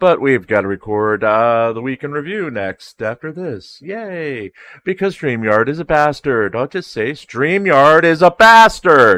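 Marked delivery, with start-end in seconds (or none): 6.5-9.2 very loud, raised, pitched-up voice. Complaining about StreamYard before recording the week in review, raised voice. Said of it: "That's raising my voice".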